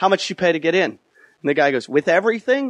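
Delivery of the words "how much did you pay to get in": acted, mock-angry snapping tone. Telling a story about a dispute with a guy, acting out snapping at him. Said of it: "I snap on this guy".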